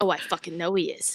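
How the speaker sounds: hushed whisper, aside under the breath. After Pedro whispers a warning, Rigatoni replies, whispering back. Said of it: "just gonna whisper back".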